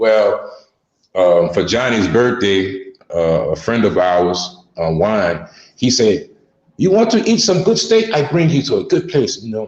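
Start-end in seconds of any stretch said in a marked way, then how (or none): 6.8-9.4 put-on Colombian-accented English, lightly raised pitch. Quoting a friend offering a good steak place: imitating Juan's Colombian accent. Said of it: "he speaks English with a Colombian accent".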